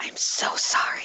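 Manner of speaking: whisper pushed loud. Apologizing in character to two people just woken by the door: loud whisper. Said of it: "I whisper very loudly".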